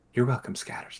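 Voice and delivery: quietest possible, barely audible whispered voice. Narrator voices her reply in the quietest voice she can manage. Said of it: "in the quietest voice that she can still manner".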